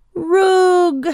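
high, shrill scream of fury and dismay. Seeing rogues look up at a shaded window, shouting at them; screamed. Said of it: "Boris screamed".

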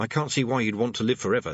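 ordinary delivery

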